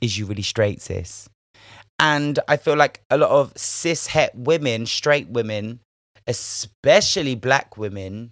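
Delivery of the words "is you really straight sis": put-on suspicious, accusing tone, low and quick. Act out someone questioning whether a man is straight, imitating a suspicious, accusatory tone. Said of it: "a tone of accusatory".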